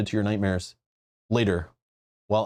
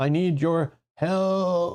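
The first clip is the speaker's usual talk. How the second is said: feeble, very slow voice, "help" drawn out; 8 semitones higher than usual. A caller speaks as you pick up the receiver, in a weak voice. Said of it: "a weak voice says".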